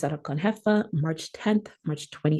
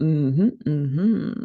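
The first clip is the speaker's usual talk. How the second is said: deep, louder Jamaican-style mm-hmm ad-lib. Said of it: "someone that knows how to do this on a track, go".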